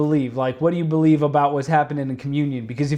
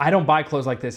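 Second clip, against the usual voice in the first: mock defensive delivery. Retelling a friend's reply after being asked about his hoodie: imitating someone getting defensive. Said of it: "immediately gets into defensive mode".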